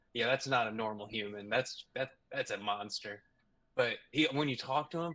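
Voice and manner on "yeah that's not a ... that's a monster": ordinary talk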